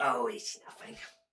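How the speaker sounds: put-on elderly dwarven woman voice. Voicing an old dwarven woman rocking on her porch: old dwarven woman voice. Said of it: "She goes".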